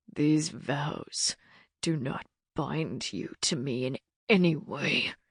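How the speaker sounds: harsh, hushed, low growling snarl. Narrator reads a man's line to her as he pulls their bound wrists, harsh growl. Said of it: "he growled harshly".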